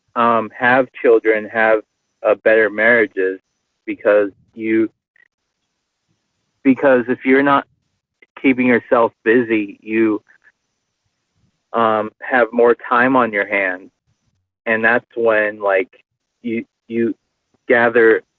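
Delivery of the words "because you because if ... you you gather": halting, stammering delivery, repeating words. Talking about marriage and children, the speaker is stuttering. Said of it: "I'm stuttering a lot".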